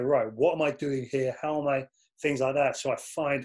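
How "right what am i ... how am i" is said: ordinary talk, nothing marked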